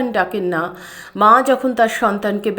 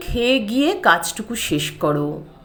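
plain

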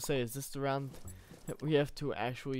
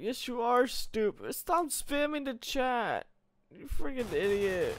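whiny, very high, swooping complaining tone; 10 semitones higher, 4 dB louder than usual. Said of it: "I sound like a little whiny person".

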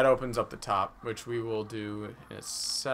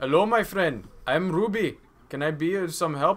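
put-on Indian accent; 6 semitones higher than usual. Greeting the other players in character during a game, in a stereotypical Indian accent. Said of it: "I like how you're doing the stereotypical Indian accent".

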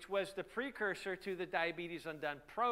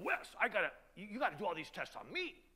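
put-on worn, rough elderly voice. Retelling what an elderly chairman said on the phone: rough old voice. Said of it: "rough, you know, gr-, old voice".

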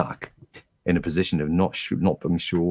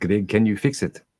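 put-on very thick, broad South African accent; 4 semitones higher than usual. Retelling what a man asked while he tried to fix a fault, broad south african accent. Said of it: "in a very broad South African accent".

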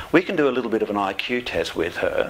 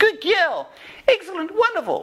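strained, very high-pitched voice; 3 dB louder than usual. Showing how the dog is trained, the speaker praises her, in a tight underpants voice. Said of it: "We reward it with that tight underpants voice".

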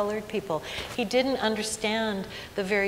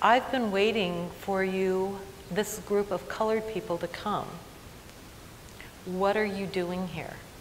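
mock-earnest, put-on sincere tone. Retelling what a campus facilities worker said to a conference group, mock-earnest tone. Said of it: "he says very earnestly".

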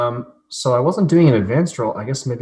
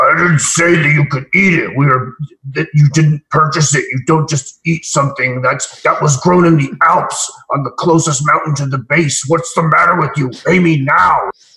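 loud, furious, angry screaming; 4 semitones higher, 8 dB louder than usual. Playing a merchant making a scene over a banana: screaming angrily. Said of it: "I start screaming at him".

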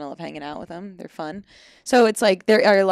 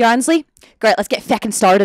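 put-on loud, full Irish accent. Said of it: "Like, full Irish".

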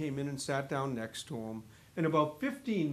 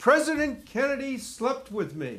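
very high-pitched, heavy, thick Irish brogue; 10 semitones higher, 7 dB louder than usual. A bookshop worker retells an elderly caller's first words, in a very thick Irish brogue. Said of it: "very thick Irish brogue".

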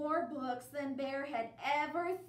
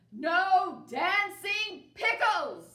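very loud, high, bellowing bear-like roar; 5 semitones higher, 9 dB louder than usual. Narrator reading Bear's reaction to the pictures inside, roared. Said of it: "Bear roared".

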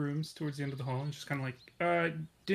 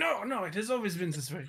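sudden put-on French accent; 5 semitones higher than usual. Mr. Max, asked if his accent changed, denies it; Lumiere-style French accent. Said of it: "has your accent changed today?".

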